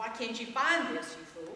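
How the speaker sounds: ordinary talk, nothing marked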